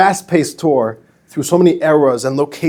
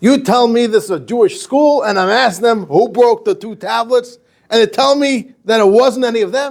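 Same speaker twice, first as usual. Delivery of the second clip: high, put-on, seething, livid outrage; 8 semitones higher than usual. Telling a joke, quoting the rabbi to the principal: imitating a livid rabbi. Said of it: "and he's livid".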